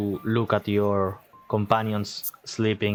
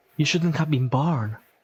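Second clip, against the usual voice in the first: put-on laughing children's voices; 5 semitones higher than usual. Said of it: "you hear the laughter of children's".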